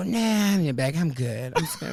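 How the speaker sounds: mock seductive voice. Retelling a checkout conversation with a bagger: retelling in a put-on sexy voice. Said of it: "sexy voice, though".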